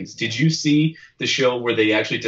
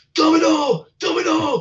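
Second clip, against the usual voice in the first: loud high-pitched yelling. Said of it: "this guy was just yelling".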